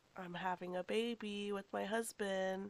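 ordinary talk, nothing marked

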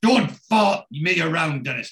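mild half shout. Telling a story, retelling a man's shout at another man. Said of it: "And he shouts".

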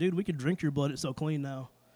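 ordinary talk

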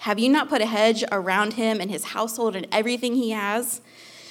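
ordinary delivery

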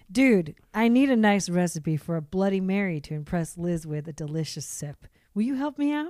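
fatherly voice. Reading a father's text message aloud, imitating dad's voice. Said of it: "do his voice".

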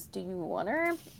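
soft mumbled mutter under the breath. Retelling a man in a story offering a woman a puppy, retelling a mutter. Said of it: "he just kind of mutters".

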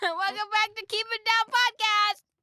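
shrill, very loud, high-pitched, enthusiastic. Opening the Keep It Down Podcast episode: real loud. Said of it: "That was real loud".

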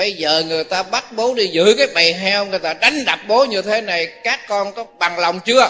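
loud, shouted, put-on changed voice. Retelling the father's words to his children: changed voice, speaking loudly. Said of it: "Bây giờ ông đổi giọng nha, ông nói to lên".

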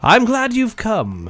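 booming, very high, disembodied-sounding female voice. Narrating a scene, the speaker voices a voice coming from a daffodil, booming. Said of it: "this booming voice comes out".

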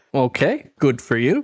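ordinary talk

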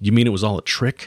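plain reading voice

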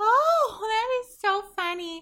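very high, drawn-out, overdone, delighted, over-amused gushing. Showing how an acquaintance talks: imitating Amy's way of talking. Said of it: "This is how she talks".

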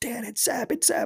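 very high, hushed, eager thrill under the breath. Retelling what Isaac said late at night while pumping his fist: imitating someone speaking quietly. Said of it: "quietly, like, pumping his fist".

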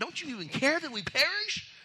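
mock indignant, very high-pitched, upset. Acting out what people said to him, imitating someone upset. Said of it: "like they were upset".

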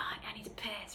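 soft, voiceless whisper. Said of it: "Greg's like".

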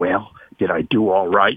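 put-on whisper. Retelling what the boss asked on leaving the office: imitating a whisper. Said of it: "he says in a whisper".

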